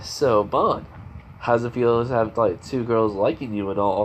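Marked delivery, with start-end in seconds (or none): none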